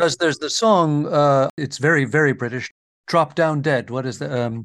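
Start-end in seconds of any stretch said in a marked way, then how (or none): none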